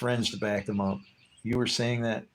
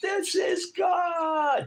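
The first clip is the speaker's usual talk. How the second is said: very high scream, "God" drawn out; 3 dB louder than usual. Retelling standing outside in a lightning storm: imitating own past screaming. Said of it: "I'm screaming".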